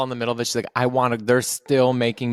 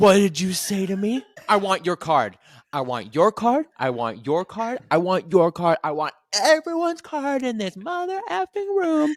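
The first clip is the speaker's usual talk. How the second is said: put-on screaming, higher pitched; 8 semitones higher than usual. Retelling how a witness reacted to the videographer: imitating someone screaming. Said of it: "she was screaming at".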